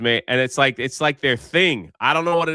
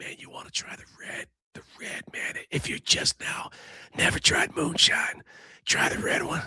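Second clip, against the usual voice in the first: hushed, breathy whisper; 3 semitones higher, 7 dB quieter than usual. Retelling a moonshine seller at a farmer's market, imitating a whispering voice. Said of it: "Guy was like he whispering".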